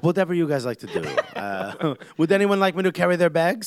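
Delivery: put-on French-accented voice. Imitating Zlatan Ibrahimovic as a humble bench player: Zlatan impression, French accent. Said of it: "I have this French accent, but I am Zlatan".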